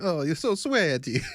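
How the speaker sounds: clichéd stock Italian voice. Speaker retells a line said to an italian girl: stereotypical italian voice. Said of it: "a like a stereotypical stereotypical Italian voice".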